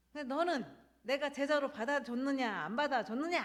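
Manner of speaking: high, loud, thunderous scolding delivery.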